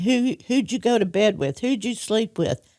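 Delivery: jealous, demanding, accusing, interrogating tone. Speaker recounts a jealous man interrogating them after nights out; imitating someone yelling. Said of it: "he'd scream and yell at me".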